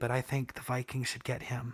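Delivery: very soft, hushed, confiding murmur. A host talks to listeners about a quarterback, said quietly. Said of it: "I'm going to say this real quietly".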